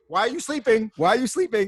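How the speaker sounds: very high, accusing, challenging tone. Retelling how the voicemail woman accuses the caller of resting: imitating an accusing woman. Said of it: "the woman starts accusing me of, of resting".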